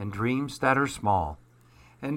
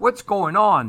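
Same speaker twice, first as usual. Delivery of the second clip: raised, pitched-up sleepy grumble; 7 semitones higher, 9 dB louder than usual. Narrator reads a bear woken from his slumber by a racket: grumbled, just woken. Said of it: "he grumbled".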